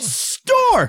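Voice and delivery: put-on very high, stuttering kid voice.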